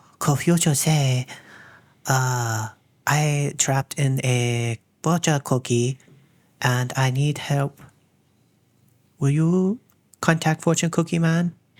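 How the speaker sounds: very slow, over-the-top fake Chinese accent. Speaker recalls reading a fortune cookie at a chinese restaurant, put-on chinese accent. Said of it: "I start talking in a Chinese accent".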